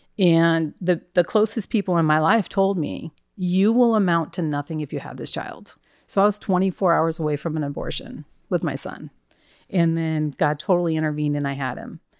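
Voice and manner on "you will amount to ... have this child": ordinary delivery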